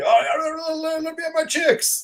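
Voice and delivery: shrill, very high-pitched, pained scream. Retelling a filmed scene where he was really hurt: imitating Mike screaming in pain. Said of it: "when he's screaming".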